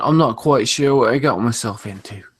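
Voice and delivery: terrible, clumsy put-on British accent. Speaker voices what a fighter is thinking during a fight, bad Mark Hunt impression. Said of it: "that was British".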